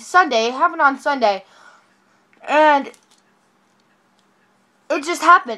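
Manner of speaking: rattled, agitated, freaking out. Telling everybody from bed about something that happened sunday, freaking out. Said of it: "I'm freaking out".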